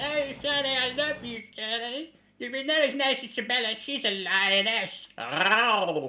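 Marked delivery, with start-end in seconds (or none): 0.0-5.1 squeaky comic voice, very high pitched. Asked for an impression, doing how Corky talks: Corky voice. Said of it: "A bit like that".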